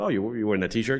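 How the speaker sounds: acted sarcastic voice. Retelling what he says to kids wearing band T-shirts, retelling a sarcastic remark. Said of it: "Because I'm kind of sarcastic".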